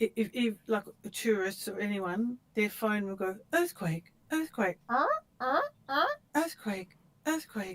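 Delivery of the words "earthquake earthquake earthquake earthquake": silly, high, swooping funny announcer voice. Explaining the phone earthquake alert, speaker imitates it in a funny voice. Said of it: "I do a very funny voice".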